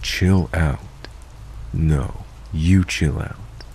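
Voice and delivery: slow, satanic, possessed-sounding demonic voice. Acting out Frank's response when Adam tells him to chill out, in the most demonic voice. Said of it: "in the most demonic voice".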